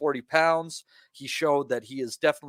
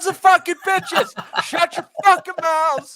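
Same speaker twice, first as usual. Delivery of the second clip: put-on mock screaming, much higher and louder; 8 dB louder than usual. Joking about parents shouting at their kids at home: mock screaming at the kids. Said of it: "you got to scream at them".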